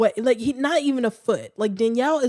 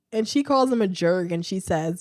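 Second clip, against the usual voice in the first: ordinary talk, nothing marked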